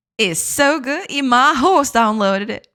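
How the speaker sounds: Southern US accent throughout. Recording a soundbite for a chat command, in a Southern American accent. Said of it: "Jay says it in a Southern American accent".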